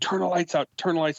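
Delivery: acted, high, rushed scream at full tilt. Soaked from running, speaker reenacts slamming the door, retelling a scream. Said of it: "and I scream".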